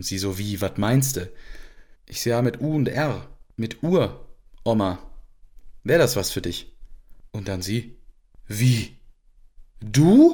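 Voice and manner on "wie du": swooping pitch, utter disbelief, totally incredulous. Retelling grandma's reaction to becoming a great-grandmother, imitating total disbelief. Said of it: "total ungläubig".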